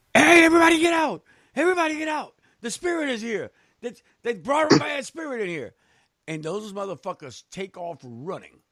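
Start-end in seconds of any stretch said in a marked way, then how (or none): 0.2-5.8 very high, alarmed screaming. Retelling how a man burst in with a spray bottle: imitating someone screaming.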